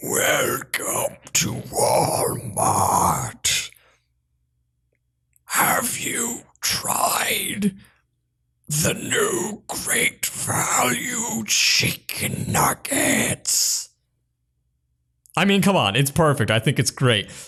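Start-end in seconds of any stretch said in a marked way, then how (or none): 0.0-13.9 put-on slow, drawn-out, breathy, evil old voice. Imagining a character as a store greeter: imitating Gerald Robotnik, old and evil. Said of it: "I think his voice is old and evil".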